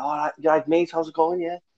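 put-on Liverpool Scouse accent. Retelling how a man came up to him while he worked on his dissertation, scouse accent. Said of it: "That was my best Scouse accent".

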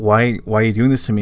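ordinary talk

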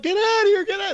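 very high, shrill screaming. Retelling friends yelling at the speaker from the car, imitating friends screaming. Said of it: "They're screaming at me".

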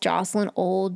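ordinary delivery

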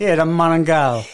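put-on New Jersey Italian accent. Joking about the other speaker's voice: put-on Italian New Jersey accent. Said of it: "you sound just like such an Italian from New Jersey".

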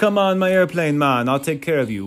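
put-on, badly done Jamaican accent. Describing a game's character introduction, quoting Funky Kong in a bad Jamaican accent. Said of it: "I have a terrible Jamaican accent".

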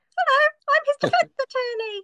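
squeaky, very high-pitched owl-like voice. Imagining a stuffed owl speaking as defense attorney in court: owl voice. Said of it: "a very accurate portrayal of an owl's voice".

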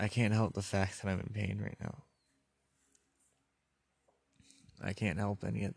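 choked-up voice catching with emotion. Talking about being in pain and needing help, choked up. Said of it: "I'm getting a little bit fucking choked up".

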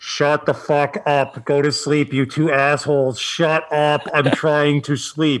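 put-on yell. Father retelling yelling at his wife and son at 3 a.m., retelling a Darth Vader yell. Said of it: "I'm Darth Vader yelling".

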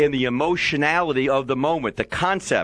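plain reading voice

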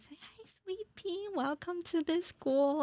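put-on overly nice voice, sweet, high and slow. Retelling how a teacher greeted a newcomer at orientation: imitating a teacher being all nice. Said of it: "all nice".

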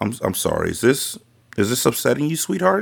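worried, caring, concerned tone. Grandma turns to her grandchild during a family discussion, in a concerned tone. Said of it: "in a concerned tone".

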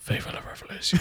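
soft, hushed, breathy whisper. Playing their character, the speaker leans in toward the guards, whispering. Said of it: "I lean in and whisper".

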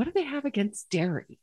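high, sneering, scornful, dismissive tone. Retelling a gentleman's reaction to a Ditch Dairy t-shirt, with mock-scornful question. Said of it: "he rolls his eyes and scowls and says".

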